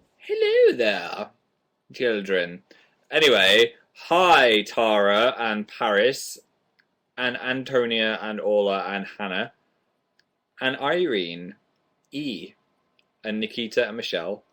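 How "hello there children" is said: high, swooping, regal-sounding voice. Showing how the Queen really speaks: imitating the Queen. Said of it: "She's more like".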